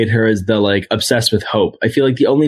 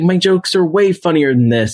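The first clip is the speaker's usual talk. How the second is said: put-on angry outburst, higher and faster; 7 semitones higher than usual. Retelling the actor who was upset about his character's jokes, playing mock-angry. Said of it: "he gets all pissed off".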